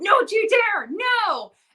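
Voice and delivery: frightened scream, very high, very slow, drawn-out. Retelling how the other speaker reacted whenever Vecna jumped out: imitating her screaming. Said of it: "She was screaming no every time".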